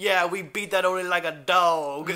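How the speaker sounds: put-on weird country accent with "dog" drawn out. Recapping a movie, the speaker quotes a favorite line read: Slug's weird country accent. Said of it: "he says it in a weird country accent".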